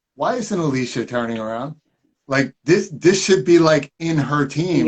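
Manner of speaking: normal talking voice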